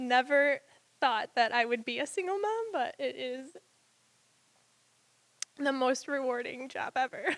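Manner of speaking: speaking through tears. A single mom, talking about her two-year-old son, speaks while crying. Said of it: "give me a minute".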